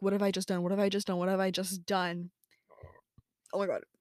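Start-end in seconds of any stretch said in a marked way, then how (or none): none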